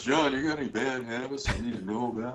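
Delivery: soft, hushed, friendly voice. Retelling a question from the man you spent five years on the road with, in a Charlie impression. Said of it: "you kind of get his voice down".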